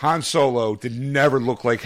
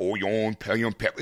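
put-on thick Cajun accent; 2 semitones lower, 5 dB quieter than usual. Imitating a TV chef who was hard to understand: imitating the Cajun Chef. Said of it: "used to watching the Cajun Chef".

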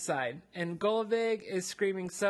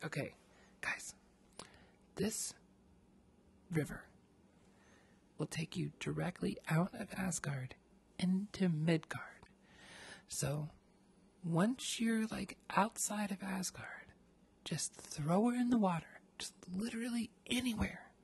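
put-on leaning-in whisper; 7 dB quieter than usual. Retelling the game, the speaker acts out Odin leaning over to the group, whispering as Odin. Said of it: "leans over and whispers to us".

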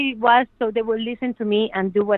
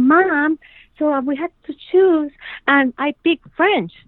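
put-on eager, excited kid voice, pitched up; 6 semitones higher, 4 dB louder than usual. Retelling what a son said about choosing French: imitating an excited child. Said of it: "he came all excited".

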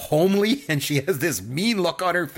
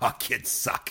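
fed-up, exasperated, breathy whisper with a sigh; 5 semitones lower, 6 dB quieter than usual. Quoting a movie mother's line about the kids: exasperated Mama Fratelli. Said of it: "she's just, like, exasperated by these kids".

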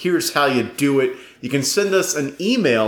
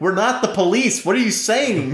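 put-on exasperated shouting; 11 semitones higher than usual. Retelling how friends kept yelling at the speaker during a role-play session, acting it out as an impression, put-on exasperated yelling. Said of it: "And I was like".

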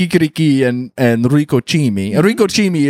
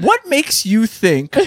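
high, slow incredulous tone. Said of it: "and I go".

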